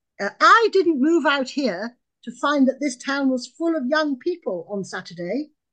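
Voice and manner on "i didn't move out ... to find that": ordinary delivery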